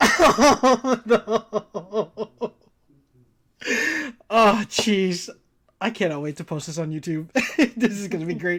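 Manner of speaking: laughing hard while talking. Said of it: "I'm crying".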